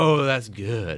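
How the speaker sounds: put-on slow, drawn-out, far-off, savoring little-kid voice. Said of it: "she's like".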